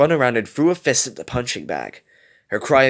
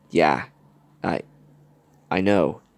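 unsure, hesitant, low voice; 8 semitones lower than usual. A woman replies to her companion's remark, hesitantly. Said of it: "Gogo replied hesitantly".

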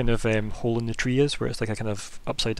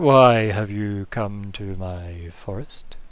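loud, big, rumbling giant voice; 2 semitones lower, 5 dB louder than usual. A game narrator voices a tree that the party meets at its forest, in a big rumbly voice. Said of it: "in a big rumbly voice".

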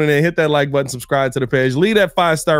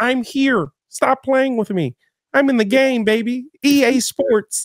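higher, weak, dying megaphone-like voice; 9 semitones higher than usual. Imitating a football star heard mic'd up: imitating Pat Mahomes' voice. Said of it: "he sounds like a, a, a megaphone".

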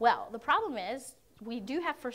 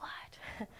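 unvoiced, shocked whisper. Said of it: "You're like".

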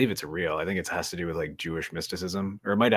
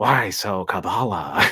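loud, creepy, weird-sounding voice; 3 semitones higher, 8 dB louder than usual. Recalling how you kept acting like a weirdo in the theater, do a Joker voice. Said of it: "as like a Joker voice".

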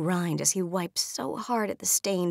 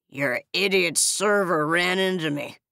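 put-on loud, sloppy, slurred drunk speech; 5 dB louder than usual. A drunk man confronts the narrator over broken glass, drunk slurring. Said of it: "The man slurs, swaying on his feet".

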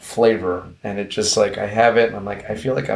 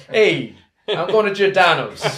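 high, put-on New York accent; 9 semitones higher than usual. Discussing how the name Giordano's sounds: put-on New York accent. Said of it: "Like some New York accent".

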